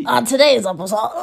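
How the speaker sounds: loud, deliberately trashy put-on voice. Joking about sounding trashy from allergies: put-on trashy voice. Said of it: "I feel like I sound trashy. I feel like I'm like".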